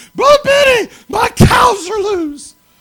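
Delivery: shrill, very high, very loud screaming call. Retelling a phone call about loose cows, imitating Bernadine screaming. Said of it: "This woman screaming".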